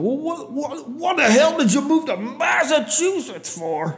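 sudden, acted, high-pitched bellowing outburst. Retelling a man's reaction on hearing the speaker is from Iowa, retelling a bellowed outburst. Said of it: "he just like immediately bellows out, he bursts out".

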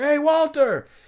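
very high-pitched, shrill, loud yelling. Retelling how a man yelled across a quiet room: imitating a man yelling. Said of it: "this guy's, like, yelling".

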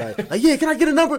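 shrill, very high, loud yell. Recreating a plant-worker video bit, ordering food: retelling a yell. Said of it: "so I was yelling everything".

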